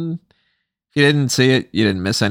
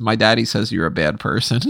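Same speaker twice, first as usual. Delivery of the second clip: ordinary delivery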